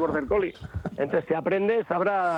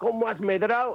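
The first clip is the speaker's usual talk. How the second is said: ordinary talk, nothing marked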